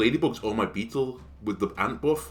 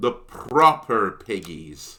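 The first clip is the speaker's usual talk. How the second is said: loud put-on West Country accent; 3 semitones lower, 5 dB louder than usual. Naming a team while playing, saying proper in a West Country accent. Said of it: "saying proper with, you know, a West Country accent".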